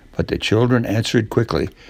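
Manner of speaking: ordinary delivery, nothing marked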